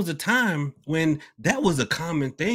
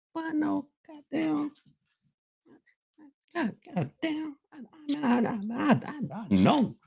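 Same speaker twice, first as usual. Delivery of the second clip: very high, slow, fuming stammer stuck repeating; 12 semitones higher, 5 dB quieter than usual. Acting out being so mad you can't even move: imitating someone too mad to move. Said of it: "You just get so mad, be like".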